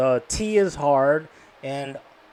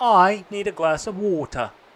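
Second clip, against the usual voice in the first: put-on British accent with lots of pitch movement; 4 semitones higher than usual. Teaching how to sound like a British person, giving an example in a British accent. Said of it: "And then work on the pitch".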